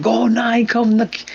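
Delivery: high, drawn-out scream at top of lungs. Retelling watching a stock rise: imitating himself screaming. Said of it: "I was screaming at the top of my lungs".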